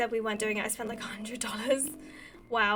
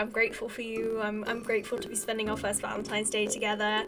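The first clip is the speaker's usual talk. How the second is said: ordinary talk, nothing marked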